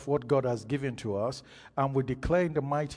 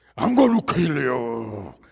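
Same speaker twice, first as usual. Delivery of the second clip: woman using a loud man's voice, drawn-out "you"; 8 dB louder than usual. Retelling a woman who went down under the power of god: imitating a man's voice. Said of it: "she's speaking with a man's voice".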